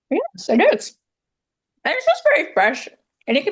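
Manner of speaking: speaking with mouth full. Eating vegetables on camera and answering while still chewing, talking with mouth full. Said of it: "let me chew my food".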